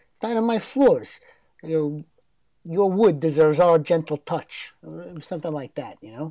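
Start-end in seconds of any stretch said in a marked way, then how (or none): 0.2-4.7 put-on thick Italian accent. Recalling an ad's voice when asked about it: imitating a thick italian accent. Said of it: "like a thick Italian kinda".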